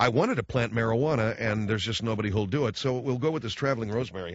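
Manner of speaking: ordinary delivery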